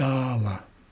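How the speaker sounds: "Dala" with high tone on first syllable "Da". Teaching a Haislikella word with an acute accent: high tone on first syllable of Dala. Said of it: "we're starting off on a higher tone".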